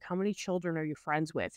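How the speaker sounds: mock monotone, deadpan, sarcastic delivery. Retelling a scene's line in a put-on monotone deadpan sarcastic voice. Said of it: "Just the monotone, deadpan kind of sarcasticness".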